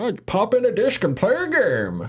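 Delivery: high-pitched, put-on old man voice. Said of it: "I know I sound like an old man".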